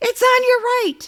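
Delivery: put-on very high, shrill, alarmed shriek. Retelling warning the roommate again: retelling a scream. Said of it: "I screamed again".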